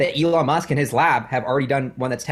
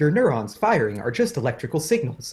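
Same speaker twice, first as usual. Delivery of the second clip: machine-like, computer-style voice. Recounting an immersive sci-fi theater show, quoting what it said in a computer voice. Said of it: "It's like this computer voice".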